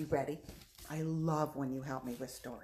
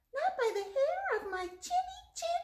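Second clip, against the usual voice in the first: very high, squeaky, funny pig voice. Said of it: "in a very funny voice".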